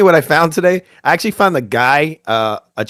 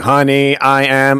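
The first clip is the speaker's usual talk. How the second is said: machine-like, synthetic robotic voice. Describing a supposed passenger's phone call, robotic voice imitation. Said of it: "it sounded like a damn robot".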